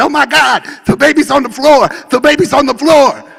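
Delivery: frantic, shrill, loud panicked outburst. Retelling the mother's outburst during a birth in a car: imitating a panicked mother. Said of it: "her mother lost it".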